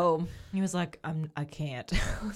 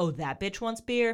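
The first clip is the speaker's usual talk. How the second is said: mocking, judgmental scoffing tone; 4 semitones higher than usual. Imitating a friend who was judgmental at the bar: imitating a judgmental bartender. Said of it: "he'd be like".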